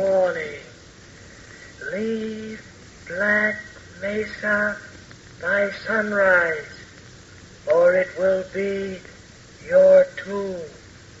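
eerie, ghostly, disembodied spectral whispering voice. A voice out of nowhere speaks to two characters, in a ghostly whisper. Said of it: "A ghostly voice out of nowhere, whispering death".

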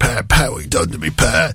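low-pitched, badly done Cockney accent. Presenting a music countdown, do the other Mike's saying as a rubbish Cockney Mike Reid impression. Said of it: "the rubbish London Cockney accents".

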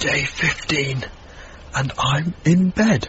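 whispering. Taping a day-fifteen entry in bed with an overnight guest asleep, whispering. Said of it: "the reason why I'm whispering".

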